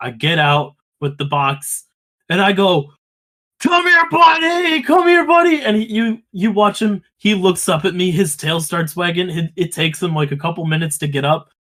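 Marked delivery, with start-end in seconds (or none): 3.6-5.6 very high, shrill, loud shrieking call. Retelling calling an old dog over from the roadside: high-pitched shrieking voice. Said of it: "in this like high pitched shrieking voice".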